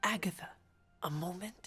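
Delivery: hushed whispering voice. Asking another for a private word: whispering. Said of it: "And why are we whispering?".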